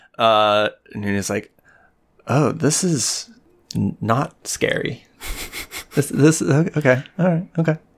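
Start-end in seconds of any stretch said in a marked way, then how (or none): 2.3-7.8 muttered under breath, much higher. Narrating what a character says under his breath, muttered under breath. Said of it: "under his breath".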